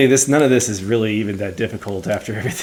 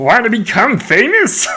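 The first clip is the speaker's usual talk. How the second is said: very high, loud, swinging goofy bear voice; 11 semitones higher, 5 dB louder than usual. Trying out voices after being told they are all Kermit the Frog, do a Fozzie voice. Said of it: "That's more like Fozzie".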